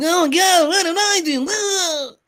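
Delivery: very high, slow whiny voice. Doing an impression of the other speaker for the group: imitating the other speaker. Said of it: "this is my impression of you".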